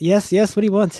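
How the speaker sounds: very exasperated. Game narrator voices the person answering a nine-one-one call, very exasperated. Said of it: "their voice is very exasperated".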